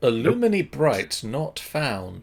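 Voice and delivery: high, swooping voice of an enchanted talking door. Voicing a magic door that rejects a name: voice of the magic door. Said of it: "A voice emanates from the door".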